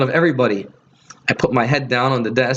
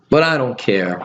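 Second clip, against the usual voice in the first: plain reading voice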